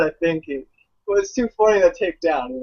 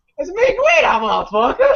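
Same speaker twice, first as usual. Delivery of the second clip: acted obnoxious drunk voice, much higher; 14 semitones higher than usual. Retelling his own drunk phone call into the show, acting obnoxiously drunk. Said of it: "I'm just like obnoxiously drunk at this point".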